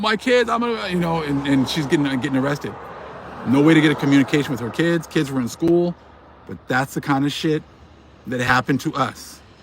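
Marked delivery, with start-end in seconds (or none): 0.0-0.9 high, mock tearful crying voice. Retelling a mom's words while she is being arrested: imitating someone crying. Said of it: "she was crying, like".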